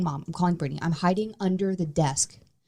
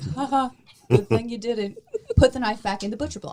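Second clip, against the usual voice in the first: mock laughing, high and teasing; 6 semitones higher than usual. Retelling how Brittany laughed at the ghost story: imitating Brittany laughing mockingly. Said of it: "Brittany laughed in my face".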